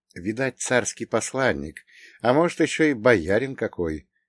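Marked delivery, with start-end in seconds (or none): none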